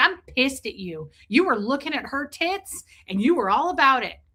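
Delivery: put-on angry, accusing, blaming outburst. Retelling calling a partner after a dream: retelling angry phone call. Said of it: "I called him mad".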